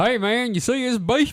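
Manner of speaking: bad put-on Southern US accent. Telling a story and quoting someone; bad southern accent. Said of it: "I'm not good at accents".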